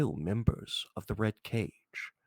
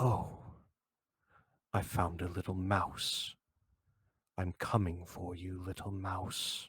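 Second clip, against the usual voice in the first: masculine voice full of rage; 3 semitones lower, 5 dB quieter than usual. Narrator of an actual play voicing an unfamiliar final voice, masculine and full of rage. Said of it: "masculine and full of rage".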